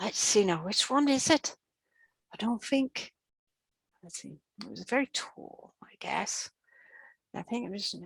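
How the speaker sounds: small, tiny, soft muttering voice. Retelling a voice heard near the doorway, tiny little voice. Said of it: "it was a tiny little voice".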